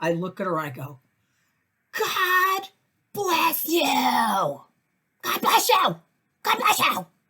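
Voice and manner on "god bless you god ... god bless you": very high, very slow, hollow, insincere shrill scream. Speaker recounting how they answered a woman, retelling a screamed blessing. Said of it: "I didn't really mean it, but I screamed it".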